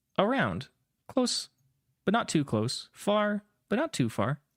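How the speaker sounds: high, machine-like voice assistant delivery. Voicing Espeon's reply to a question about where he is, robotic Siri-like voice. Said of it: "In almost kind of like a robotic or like Siri voice".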